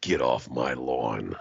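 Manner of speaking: very low, slow gravelly voice, drawn out. Doing an impression after the other speaker mentions the voice: Clint Eastwood voice. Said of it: "that fucking Clint Eastwood fucking voice".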